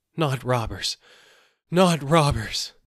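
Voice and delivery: breathless, terrified gasp. Narrator reads the terrified man answering the peddler, gasping in terror. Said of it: "gasped the terrified man".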